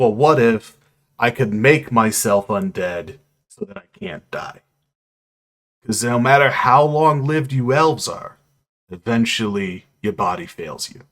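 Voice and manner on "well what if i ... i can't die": ordinary talk, nothing marked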